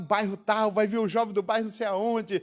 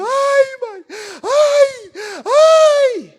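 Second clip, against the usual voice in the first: very shrill, loud, very slow fake sobbing wails; 12 dB louder than usual. Retelling how she hid under a blanket while her mother hit her, fake crying. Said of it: "E eu fingia que estava chorando".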